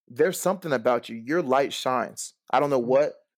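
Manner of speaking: ordinary talk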